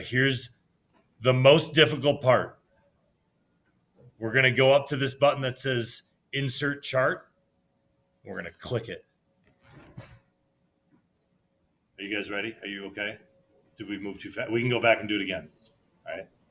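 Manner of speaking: deadpan, sarcastic, fake-concerned, mock-serious talk. Walking students through a spreadsheet step on the screen: sarcastic. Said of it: "I'm being sarcastic".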